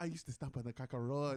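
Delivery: put-on Nigerian accent. Retelling a friend's joke during a fight: imitating Chucky Man's Nigerian accent. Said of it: "the best Nigerian accent ever".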